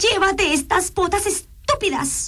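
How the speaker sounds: very high, piercing, shrill shriek. The princess, brought back to the palace where the wizard waits: shrieking. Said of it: "chilló ella".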